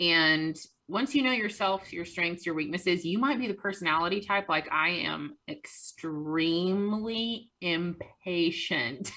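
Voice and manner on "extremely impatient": deliberate, slow, drawn-out emphasis on extremely. A speaker describing their own personality to an audience, said slowly. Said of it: "I say that slowly".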